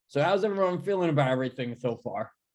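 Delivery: talking with mouth full, chewing through the words. A character shovels food in and asks everyone how they feel, talking with mouth full. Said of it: "mouth full".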